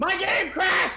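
high, loud shouted yell.

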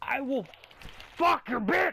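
enraged, furious screaming, pitched way up. Playing a game and getting pissed off, furious yelling. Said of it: "I'm just getting really goddamn pissed!".

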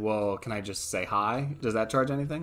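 ordinary delivery

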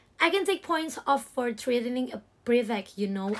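ordinary delivery, nothing marked

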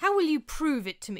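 high, pressing, insistent, demanding voice. Narrating fiction, voicing a woman pressing the narrator for proof: demanding. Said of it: "Cynthia demanded of me".

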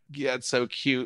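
ordinary talk

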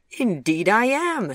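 proud, high and loud. Answering his companion's mother, who asks if he is an entrepreneur, proudly. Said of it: "said Chip proudly".

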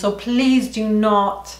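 really bad English accent.

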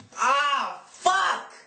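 loud scream of pain.

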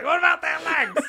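very high, very loud, shrill little orc voice. Retelling a movie scene of an orc horde: little annoying orc voice. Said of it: "he's like".

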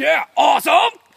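unreined, over-the-top, too-loud burst of approval. Answering a friend about the ride's changing leaves: too loud. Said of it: "a little bit quieter there".

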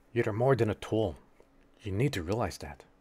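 hushed whispering. Narrating a scene where a character grabs the listener, speaking her line whispering. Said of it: "she just kind of whispers like".

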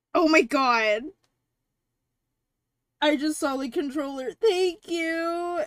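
high, loud voice thick with happy tears. Thanking someone right after seeing the controller, crying happy tears. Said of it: "I am crying".

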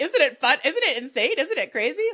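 mock very loud, lighthearted, carefree gushing chatter. Recalling texts sent to the other host, acting out lighthearted texts.

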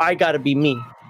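ordinary talk

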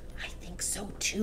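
hushed whisper. Lavender whispers back to Matilda during the contest, whispered. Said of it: "Lavender whispered back".

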